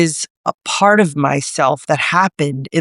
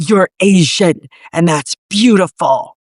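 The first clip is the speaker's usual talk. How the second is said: put-on intense, full-on New York accent. Retelling what an older woman from Chinatown told her, imitating Zoe's intense New York accent. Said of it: "this intense kind of, like, New York accent".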